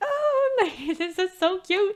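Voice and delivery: overcome, emotional, high, drawn-out gush. Reacting to a message while speaking to the viewers, emotional. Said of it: "I'm getting emotional".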